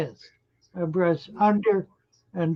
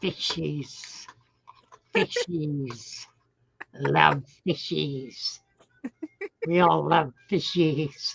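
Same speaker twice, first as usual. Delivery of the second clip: raspy, hissing creature voice; 2 semitones lower, 4 dB quieter than usual. Told they could do an awesome Lord of the Rings impression: Gollum voice. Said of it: "nailed it".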